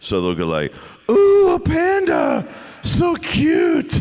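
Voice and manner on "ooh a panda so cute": very high, drawn-out, slow put-on girl voice. The speaker shows the voice they use for cartoon girl characters: girly voice. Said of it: "That's literally the best girl voice I've got".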